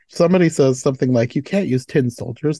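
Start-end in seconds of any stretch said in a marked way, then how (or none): none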